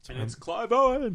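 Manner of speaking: very high, put-on, frightened scared voice. Joking that a horror movie monster comes from under the bed: put-on scared dad voice. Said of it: "scared dad voice you did of".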